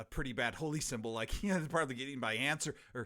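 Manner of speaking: plain reading voice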